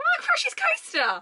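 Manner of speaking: voice cracking. Naming a second favorite ride, voice cracking. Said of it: "My voice cracked".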